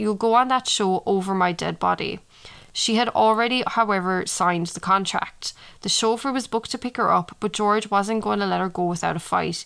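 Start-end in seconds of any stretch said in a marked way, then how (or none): none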